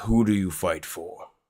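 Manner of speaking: rough, harsh, rasping voice. Something speaks out to the group, in a rough voice. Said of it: "rough voice".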